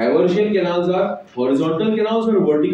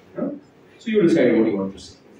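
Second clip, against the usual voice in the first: plain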